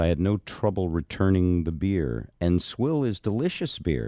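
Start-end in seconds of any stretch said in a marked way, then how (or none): none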